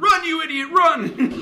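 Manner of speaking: very high, drawn-out shout. Telling how a man copied the crowd at a ball game, retelling a yell. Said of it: "he starts yelling".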